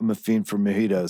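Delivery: put-on serious low mumble. Retelling the line he told them to say, as a mock-serious low mumble. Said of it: "mumble in a very serious, low voice".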